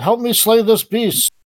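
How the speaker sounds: rallying, high, in-character battle yell. Declaring a character's action in a fight against a beast: in-character yell.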